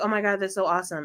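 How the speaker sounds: ordinary talk, nothing marked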